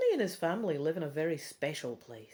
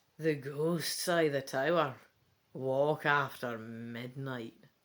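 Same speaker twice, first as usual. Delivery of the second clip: eerie, low, slow, spooky voice; 4 semitones lower than usual. Reading a story aloud, a boy telling ghost tales: spookiest voice. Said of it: "Rodney says in his spookiest voice".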